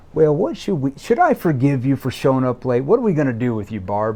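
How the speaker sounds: light, playful, sing-song teasing tone. Teasing someone who showed up late, playful, teasing tone. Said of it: "I'm going to be in a playful tone like".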